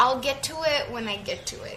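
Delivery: normal talking voice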